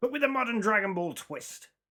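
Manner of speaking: high pirate-style voice. Speaker summarizing a Dragon Ball story, accidentally in a pirate-like voice. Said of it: "I don't know why I sounded like a pirate".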